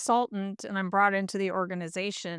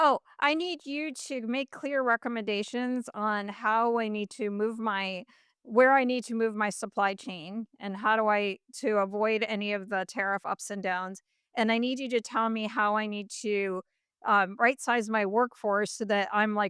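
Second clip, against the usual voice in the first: usual speaking voice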